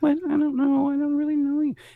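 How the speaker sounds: put-on squeaky, very high little kid voice. In a skit, a kid replies to a stranger, little kid voice. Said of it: "Hey, kid".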